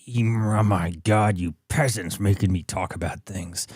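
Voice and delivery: put-on snarling tone. Mocking a photo of a politician with put-on snarling, vicious tone. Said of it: "This, this snarling, vicious".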